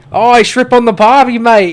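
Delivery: loud, fake Australian accent that keeps slipping. Admitting he can't do the accent, then trying it anyway: bad Australian accent. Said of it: "That's Australian, isn't it?".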